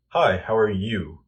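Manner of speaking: confident, statement-like falling tune on how are you. Showing the right way to greet someone: high to low, confident statement. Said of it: "I'm sure you see the difference".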